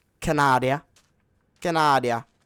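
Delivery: booming, very loud, badly done French accent. A speaker announcing a school trip to Quebec, in a bad French accent. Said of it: "That's not a French accent".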